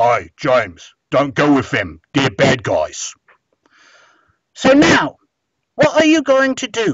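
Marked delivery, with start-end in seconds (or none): 0.0-3.1 low, loud Cockney growl, giant voice. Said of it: "who says in a Cockney accent".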